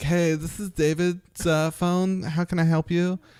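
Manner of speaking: super flamboyant, high, over-the-top camp voice.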